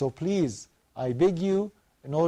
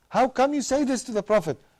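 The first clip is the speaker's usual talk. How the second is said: indignant, furious crowd outcry, pitched up; 9 semitones higher, 4 dB louder than usual. Retelling the story, the people around Prophet Muhammad object, mock-angry crowd. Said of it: "got angry and furious".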